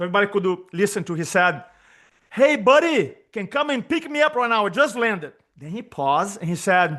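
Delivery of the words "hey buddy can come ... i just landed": put-on very loud talking, higher pitch. Retelling a quiet man's phone call after landing, imitating someone talking very loud. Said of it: "is speaking as loud as he could".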